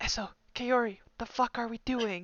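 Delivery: barely audible, quiet, hushed half-whisper. Game master voicing the loudspeaker on the control panel, quiet half-whisper. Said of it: "quietly whisper".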